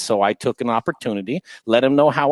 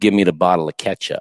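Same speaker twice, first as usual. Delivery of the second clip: put-on menacing, sadistic voice, dropped very low; 7 semitones lower than usual. Retelling what they said into a man's ear at the bar, mock-sadistic demand. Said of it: "real sadistic".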